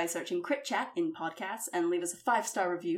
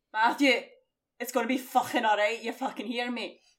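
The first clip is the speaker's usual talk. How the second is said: natural Scottish accent; 4 semitones higher, 4 dB louder than usual. Asked to give the old accent again; Scottish accent. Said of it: "That's my Scottish".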